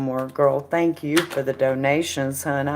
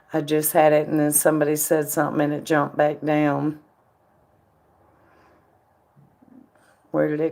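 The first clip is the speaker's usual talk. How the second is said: hoarse-sounding voice. Scrolling to find a question someone asked: hoarse voice. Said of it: "I'm hoarse and my throat is hurting".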